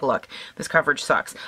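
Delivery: put-on annoyed, blunt, irritated tone. Retelling a first reaction to poor foundation coverage: imitating own annoyed self. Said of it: "I was a little annoyed 'cause I was like".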